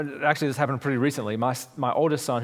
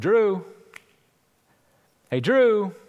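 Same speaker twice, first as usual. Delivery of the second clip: raised, high-pitched calling out; 7 semitones higher, 5 dB louder than usual. Retelling searching every room for someone, calling out. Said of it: "I start calling out".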